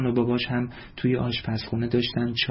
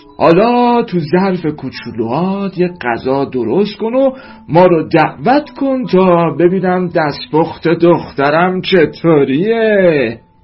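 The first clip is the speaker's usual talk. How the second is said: laughing, higher and louder; 6 semitones higher, 11 dB louder than usual. A father speaks to his daughter, laughing. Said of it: "پدر با خنده گفت".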